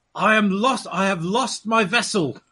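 full-on unhinged pirate voice, pitched high. Voicing the captain approaching the men in full mad pirate mode. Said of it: "in full, slightly mad ... pirate mode".

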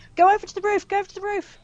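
very high-pitched, urgent shouting. A player's character shouts to others while climbing into the chopper: shouting. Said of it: "I'm shouting".

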